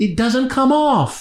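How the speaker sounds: put-on high, slow, curious small-child voice.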